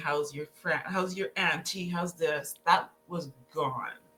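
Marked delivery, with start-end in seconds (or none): 0.0-2.5 mock cheerful chatter broken by laughter. Recalling how phone calls usually went: imitating own laughing questions.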